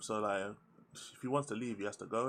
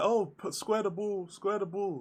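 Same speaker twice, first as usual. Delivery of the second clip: called out loud, on-pitch; 10 semitones higher, 5 dB louder than usual. Mocking a player on screen who can't be seen, imitating Solanke calling for the ball. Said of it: "Look at Solanke, like".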